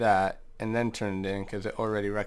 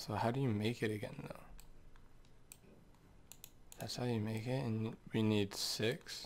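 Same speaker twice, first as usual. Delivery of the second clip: drowsy, worn-out voice, just woke up; 9 dB quieter than usual. Figuring out how to make an item in a game, tired, just woke up. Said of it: "Sorry if I sound tired".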